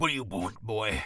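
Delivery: big, burly, hulking orc voice, very deep. Explaining how to voice a character you play, big burly orc voice. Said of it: "big burly orc. He talks like this".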